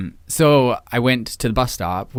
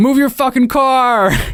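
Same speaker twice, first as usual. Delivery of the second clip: very high-pitched, very loud, shrill shout; 8 dB louder than usual. Retelling how he yelled out his truck window: imitating someone yelling. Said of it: "yells out his window".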